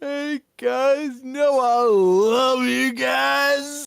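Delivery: mock very slow, high, gushing emotional drunk. Picturing Ace drunk on stream and imitating him: imitating an emotional drunk. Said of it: "an emotional drunk".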